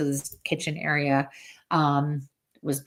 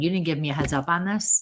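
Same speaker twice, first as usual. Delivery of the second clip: ordinary delivery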